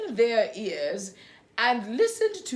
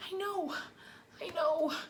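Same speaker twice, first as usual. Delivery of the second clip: tiny, trembling, quivery, very soft, hushed voice; 7 semitones higher, 12 dB quieter than usual. Violet answers Winston after he shouts at her, in a small, quivery voice. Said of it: "Violet said in a small, quivery voice".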